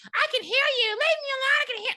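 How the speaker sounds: shrill, very high, hysterical screaming. Retelling a story, acting out her hearing knocking at the door: imitating hysterical yelling. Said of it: "Like she goes hysterical".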